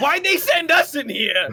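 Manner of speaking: shouting. Arguing in character with a companion, yelling at each other. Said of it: "As you're yelling at each other".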